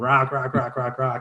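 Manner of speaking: play-acted panicked, urgent cry, repeated over and over. Retelling a caving trip when a huge rock came loose, imitating Derek's panicked screaming. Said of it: "he just started screaming".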